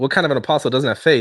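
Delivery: ordinary talk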